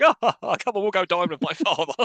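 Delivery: mock laughing while talking. Retelling a film scene where Robin laughs off a failed plan: mock laughing it off. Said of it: "They just laugh it off".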